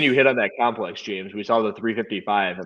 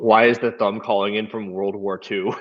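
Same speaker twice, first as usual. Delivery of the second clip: ordinary talk, nothing marked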